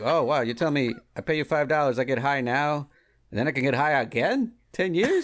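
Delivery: put-on deadpan comedian voice. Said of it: "That was a great impression, too".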